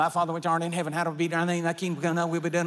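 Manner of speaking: very fast, rattled off like an auctioneer.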